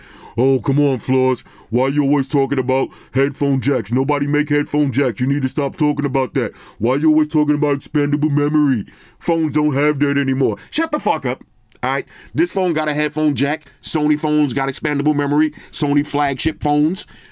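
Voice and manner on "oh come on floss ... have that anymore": scoffing, mocking hater voice. Imitating the haters who complain about headphone jack talk: mocking hater voice. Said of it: "let me get my hater voice ready".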